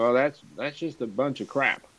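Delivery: put-on conversational Upper Midwest Wisconsin accent. Retelling what Alan answered about the envelopes: imitating Alan's Wisconsin accent. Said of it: "in his Wisconsin accent".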